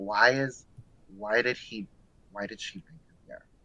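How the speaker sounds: hushed half-whisper, stumbling and tripping over the words. Retelling how the parents reacted in the other room: imitating parents half-whispering.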